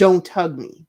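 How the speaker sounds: put-on hissing whisper through clenched teeth. Retelling how she refused a hug, imitating a clenched-teeth whisper. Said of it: "her teeth are clenched".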